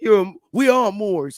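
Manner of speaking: exaggerated, put-on New York–New Jersey accent. Mimicking a mean man who swings his little knife, deep new york–new jersey accent. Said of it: "with his little deep voice from New York with New Jersey accent".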